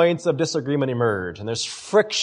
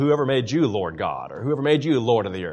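ironic, scornful, mocking sarcastic tone; 4 semitones lower, 3 dB quieter than usual. Showing how someone is called a lord with irony: sarcastic. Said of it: "That's the sarcasm in it".

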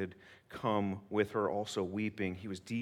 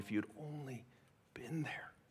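mock tearful, sobbing words; 4 semitones higher, 8 dB quieter than usual. Retelling a grieving sister's plea to Jesus, imitating Martha sobbing. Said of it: "this girl who lost her brother just sobbing".

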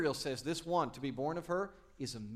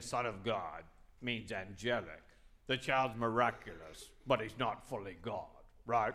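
low, sour, grumpy storybook grouch voice; 4 semitones lower, 4 dB quieter than usual. Act out what people who deny that the child is divine will say, in a Grinch voice. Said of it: "In their favorite Grinch voice".

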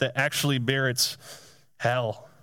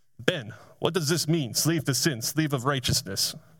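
put-on Eastern European accent. Retelling a question a man asked while driving after a study, imitating Anatoly's Eastern European accent. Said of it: "Kind of had that Eastern European accent".

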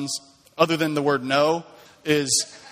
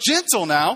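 acted yelling, higher pitch; 4 semitones higher than usual. Retelling being bitten by a one-year-old, imitating own yelling. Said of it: "I'm yelling this".

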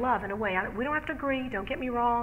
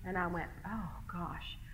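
usual speaking voice

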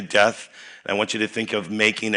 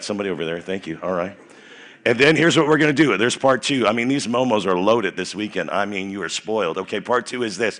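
normal talking voice

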